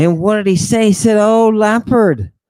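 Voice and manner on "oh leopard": put-on sobbing in a small child's voice. Retelling what a little kid said to a leopard, imitating a crying little kid. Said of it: "He started crying like some little kid".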